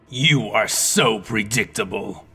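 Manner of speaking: taunting, scornful, slow mocking sneer. A dark double steps from behind a pillar to face the hero, sneering mockingly. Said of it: "he sneered mockingly".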